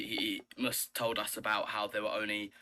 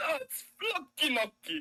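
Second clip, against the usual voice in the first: butchered put-on Italian accent, higher; 4 dB louder than usual. Joking about saying a tricky word: english chef's bad italian accent. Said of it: "sort of English chefs, like, butchering an Italian recipe".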